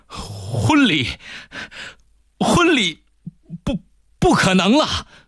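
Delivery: halting, gasping stutter. Reading a story aloud, the narrator voices a servant speaking to his master, stammering. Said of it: "万事达结结巴巴地说".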